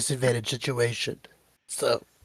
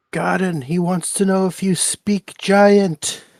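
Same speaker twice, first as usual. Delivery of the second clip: high, hollering yell in a put-on character voice; 6 semitones higher, 4 dB louder than usual. Calling out a question to another character in the game: yelling in character. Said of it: "Scrambles yells out".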